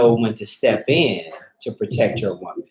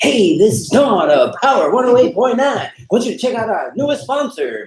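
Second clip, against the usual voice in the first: cheesy, very high, loud radio DJ voice; 12 semitones higher, 5 dB louder than usual. Advising on reading sponsor ads, speaker shows what not to do: radio guy voice. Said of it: "don't be the radio guy voice".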